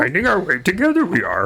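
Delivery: high, swooping creature voice. Joking through the podcast intro after the other speaker: Yoda voice. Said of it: "Is that supposed to be Yoda like me?".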